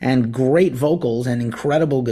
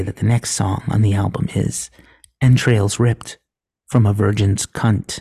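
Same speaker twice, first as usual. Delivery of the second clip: put-on radio announcer voice, pitched lower; 4 semitones lower than usual. On a podcast, after the co-host takes headphones off: NPR voice. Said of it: "I'm going to use my NPR voice".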